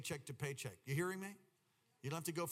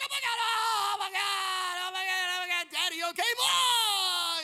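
mock shrill, very high, loud, drawn-out laughing shriek; 14 dB louder than usual. Retelling how the son reacted to the hit: imitating a laughing son. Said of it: "He was just laughing".

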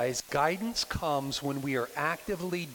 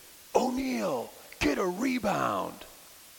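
loud, high, raspy scream; 7 semitones higher than usual. Recalling a guy in the stands during a free throw: retelling a scream. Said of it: "this guy screamed".

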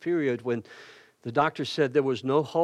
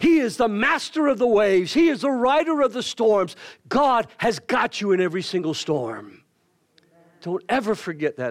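raised voice, getting loud; 7 semitones higher, 6 dB louder than usual. Speaking to an audience, then apologising for the volume; getting loud. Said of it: "I'm sorry for getting loud".

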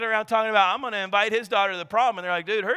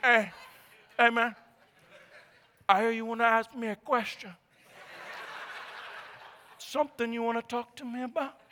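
breathy, whispered movie-mobster voice; 7 dB quieter than usual. Retelling a dad questioning his daughter's prom date: Al Pacino in Scarface voice. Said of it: "He like Al Pacino and Scarface".

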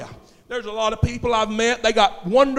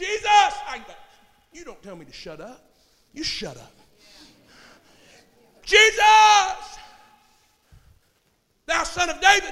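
loud, high, swooping shouted cry; 7 semitones higher than usual. Retelling how Bartimaeus called out again after being hushed: imitating someone shouting louder. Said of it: "got even louder".

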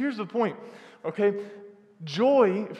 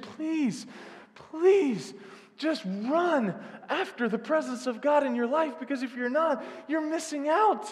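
earnest, pitched-up, begging preacher-style plea; 7 semitones higher than usual. Quoting a man telling how he pleaded with his congregation, imitating his pleading. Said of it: "I pleaded with my congregation".

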